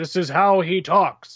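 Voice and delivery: robotic, booming put-on voice. Describing a YouTuber's take on a character, in a robotic Dr. Manhattan voice. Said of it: "it's very robotic and kind of stentorian".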